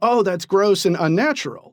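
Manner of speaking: normal talking voice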